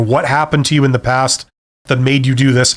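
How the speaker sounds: ordinary delivery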